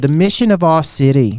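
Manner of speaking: put-on Australian accent. Imitating a pastor's favorite phrase: imitating pastor's Australian accent. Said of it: "Australian accent".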